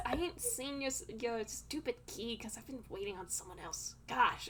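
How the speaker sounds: annoyed, huffing, irritated character voice. Voicing a character who huffs at being asked about a key: huffy, annoyed character voice. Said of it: "This guy just kind of huffs and says".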